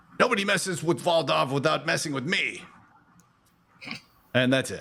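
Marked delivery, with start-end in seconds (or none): 0.2-2.6 angry, high, furious kobold creature voice. Voicing a kobold that attacks from behind: angry kobold voice. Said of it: "comes an angry kobold".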